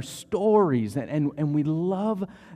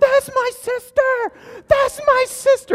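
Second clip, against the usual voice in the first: put-on shrill, very high, drawn-out child screaming; 8 dB louder than usual. A parent in a store retelling their child's outburst, imitating a child screaming. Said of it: "So screaming in the store".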